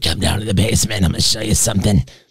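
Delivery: put-on hard-living whiskey voice. Retelling a movie mother's line to the other speaker: imitating a whiskey voice. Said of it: "whiskey voice".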